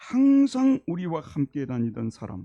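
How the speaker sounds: whole phrase 항상 우리와 함께 다니던 사람 slow, loud, stress on 항상.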